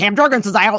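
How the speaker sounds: put-on thick Philadelphia accent. Retelling a stranger's news about Cam Jurgens, thick Philly accent. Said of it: "the thickest Philly accent I've ever heard".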